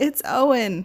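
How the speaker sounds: hoarse, squeaky voice. Retelling the first words after the birth of a son: raspy and squeaky voice. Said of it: "With a raspy and squeaky voice".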